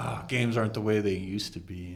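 ordinary talk

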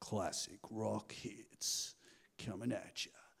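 breathy, whispered, low, deep radio announcer voice. Recalling the station Dad listened to, mimicking its announcer: deep radio announcer voice. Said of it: "in a deep voice usually be like".

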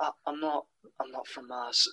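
muttered just under the breath. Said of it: "The way he says just under his breath".

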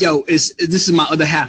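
normal talking voice

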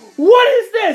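put-on screaming voice. Retelling a coach confronting a swimmer over grades: imitating coach screaming. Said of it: "he screamed at me".

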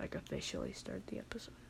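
very soft, unvoiced whisper.

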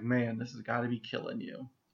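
mock muttering under the breath. Recapping a scene, acting out one character's aside to another: retelling a mutter under breath. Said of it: "just kind of under his breath is like".

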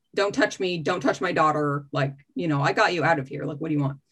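guarded, stone-cold defensive tone. Retelling own words to a crying visitor: retelling own super defensive words. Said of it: "super defensive".

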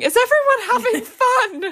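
very loud, very high, stretched-out shriek. Retelling a party, acting out their own screaming. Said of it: "And I'm just screaming".

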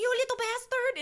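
high-pitched, shrill, put-on French accent. Recalling a line said by a father in Paris: little French accent. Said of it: "in a little French accent".

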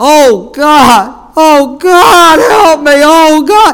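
acted very high, very loud, slow sobbing wail. Speaker retells a man down on his knees beside him: imitating a man weeping, crying out. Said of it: "he's weeping and crying, and he's crying out".

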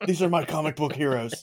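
mock threatening voice. Imagining a friend being really dark behind closed doors: imitating Lance being dark. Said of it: "what if Lance is really dark behind closed doors?".

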